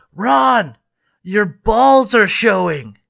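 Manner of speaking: loud, barely held-back, failed whisper. Retelling how a man in a group meeting leaned over: imitating a failed loud whisper. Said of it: "he tries to whisper, but he can't whisper".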